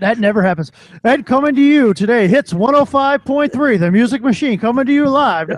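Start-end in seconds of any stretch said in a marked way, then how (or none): 1.0-5.5 put-on old-school radio DJ voice, higher. Speaker joking around, old-school radio DJ voice. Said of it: "I do that radio voice all the time".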